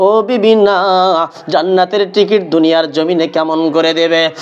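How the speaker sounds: usual speaking voice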